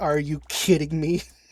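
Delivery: mock angry outburst, smiling and grinning. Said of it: "like a smiling angry".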